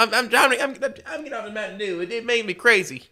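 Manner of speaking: put-on squeaky, very high hillbilly kid voice. Showing how a twenty-one-year-old talks, do a hillbilly child voice. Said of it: "just like that".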